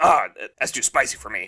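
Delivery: put-on, mock old man voice. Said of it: "Let me do my impersonation".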